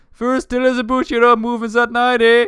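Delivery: put-on Canadian accent. Trying to imitate a Canadian man's line, attempted Canadian accent. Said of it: "he's got a Canadian accent".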